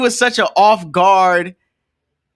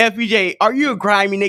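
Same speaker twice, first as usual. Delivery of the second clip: normal talking voice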